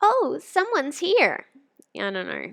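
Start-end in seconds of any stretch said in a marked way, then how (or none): 0.0-1.4 very high, loud, cute little creature voice. Voicing a little guy the player meets in a game: put-on cute creature voice. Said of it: "now I gotta find a voice for this little guy".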